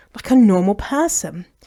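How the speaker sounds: plain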